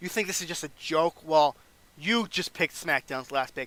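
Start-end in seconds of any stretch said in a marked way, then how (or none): none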